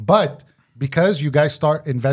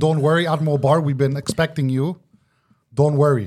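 ordinary talk

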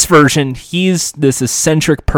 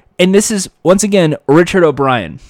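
normal talking voice

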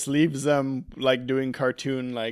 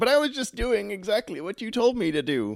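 put-on, high, tearful, sobbing voice; 8 semitones higher than usual. Recapping the scene after Bones loses the duel, imitating Bones crying. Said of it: "Bones is just like crying".

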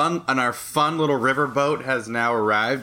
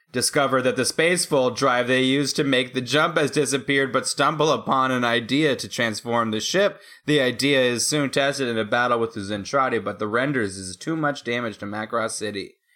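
ordinary delivery

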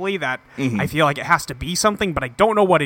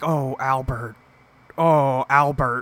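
put-on disappointed voice, lower pitch; 3 semitones lower than usual. Imitating how Gordon Cole reacts to Albert: imitating Gordon Cole, disappointed. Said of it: "he's disappointed".

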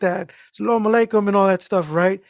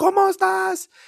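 mock, shrill, very high-pitched shout; 11 semitones higher than usual. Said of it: "She just yells on the phone".

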